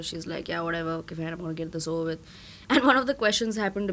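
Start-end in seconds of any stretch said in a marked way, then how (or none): 0.5-2.2 mock disinterested, flat, bored, get-it-over-with tone. Retelling how an interviewer reads questions without focus: imitating someone bored and unfocused. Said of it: "She's not even, like, focused over there".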